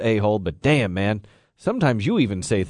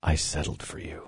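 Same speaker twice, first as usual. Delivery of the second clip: whispering, much quieter than surrounding speech; 6 semitones lower, 9 dB quieter than usual. After asking someone to come close, a speaker is whispering. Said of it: "You're whispering".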